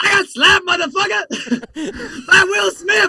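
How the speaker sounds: high, drawn-out comic voice. Acting out a comedian talking to his PR person after a slap: Chris Rock impression. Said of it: "I don't have a very good Chris Rock impression".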